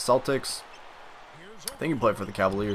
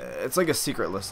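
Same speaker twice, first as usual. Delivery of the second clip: ordinary talk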